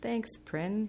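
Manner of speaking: said awkwardly. Tara replies to prin: awkward reply. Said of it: "replied awkwardly".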